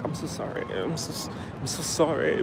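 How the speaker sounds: bashful, shy, barely whispered. Retelling a Starbucks guy looking away, imitating a shy apology. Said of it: "looks away all shyly and be like".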